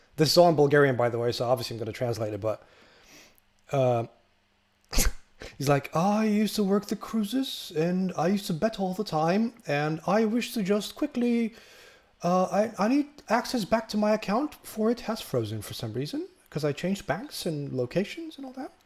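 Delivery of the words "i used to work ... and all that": put-on refined, eloquent elderly gentleman voice, soft and slow. Retelling a password reset call, the speaker imitates an eloquent caller. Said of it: "very very eloquent".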